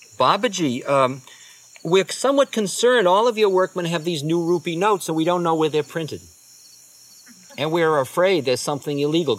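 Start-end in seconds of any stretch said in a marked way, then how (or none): none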